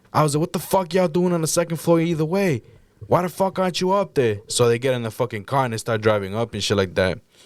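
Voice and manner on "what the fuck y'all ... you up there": heated, high, angry yell. Speaker retells yelling at the cops during an incident, retelling yelling at cops. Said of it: "I'm yelling at the cops".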